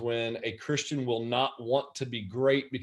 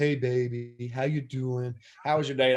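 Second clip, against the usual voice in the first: doting, syrupy, sugary sweet-talk voice. Recalling how he mocked a man talking to his wife, mocking his sweet talk. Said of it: "I would mock him".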